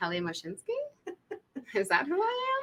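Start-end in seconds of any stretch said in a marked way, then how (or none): 0.0-0.7 rising unsure intonation, much quieter. A casting panelist showing an unsure audition slate, rising questioning intonation. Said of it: "sound like a question and we're not sure".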